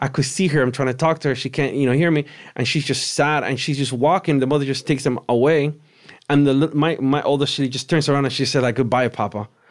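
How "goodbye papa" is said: emotionless, empty, flat deadpan delivery. Retelling a hallucination where a daughter says goodbye at a casket: imitating a flat, feelingless goodbye. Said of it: "with no feeling".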